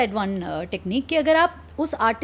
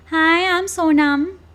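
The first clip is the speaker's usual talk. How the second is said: put-on high voice spoken through the nose; 4 semitones higher, 4 dB louder than usual. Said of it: "सो it's अ बिट nasal. तो अभी मैंने पिच भी हाई कर दी, बट एट द सेम time मैंने थोड़ा हम्म नाक से भी बोलना शुरू किया।".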